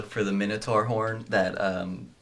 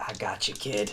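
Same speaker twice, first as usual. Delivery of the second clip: quiet, hushed whisper under the breath; 5 dB quieter than usual. Voicing a character leveling a rifle after taking a hit: whispering to oneself. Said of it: "And I whisper to myself".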